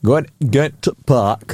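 broad northern Yorkshire accent. Chatting about liked accents and showing a Yorkshire phrase, Yorkshire accent. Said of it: "I am partial to a bit of a Yorkshire accent".

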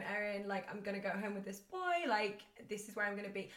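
ordinary talk

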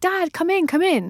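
very high, drawn-out, stretched-out shout. Retelling an onstage character calling for her dad: imitating a character shouting. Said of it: "she used to constantly shout".

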